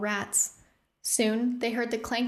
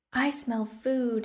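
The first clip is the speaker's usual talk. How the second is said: dreamy, much slower. A girl speaks up among her companions; dreamy. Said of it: "Evelyn said dreamily".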